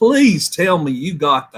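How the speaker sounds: extremely thick, swooping Southern drawl. Retelling own reaction when a flame shot went perfectly: strong southern accent. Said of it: "in the most Southern accent imaginable".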